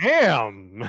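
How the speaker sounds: am heavily stressed, hit hard. Imagining how he said it when he rolled the 8, stress on 'am'. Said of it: "did I make the emphasis on am weird?".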